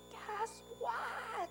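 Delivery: put-on, very high, excited shrieking child's voice. Retelling how a seven-year-old boy ran up and screeched at them. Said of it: "he screeches".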